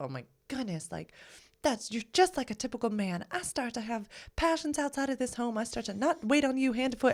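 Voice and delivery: put-on Southern accent. Acting out a way the speaker could have deflected instead: southern accent. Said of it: "you did it with a southern accent".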